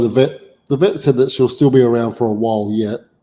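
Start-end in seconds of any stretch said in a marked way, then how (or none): none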